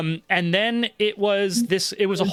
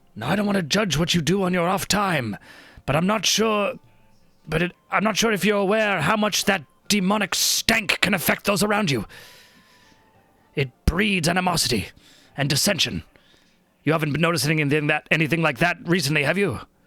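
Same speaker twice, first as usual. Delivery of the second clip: voiced stage half-whisper. Voicing a character who kneels beside another: half whisper. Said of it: "in a kinda half whisper".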